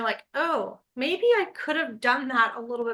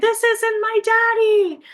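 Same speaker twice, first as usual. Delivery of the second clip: put-on high, loud, wailing child's scream; 9 semitones higher, 5 dB louder than usual. A parent retells a son being carried out of Costco, imitating a child screaming. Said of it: "And he's screaming".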